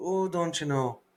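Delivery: put-on upper Midwest Minnesota-Wisconsin accent. Imitating how a woman talked, in a Minnesota-Wisconsin accent. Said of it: "that Minnesota, Wisconsin, yeah, area".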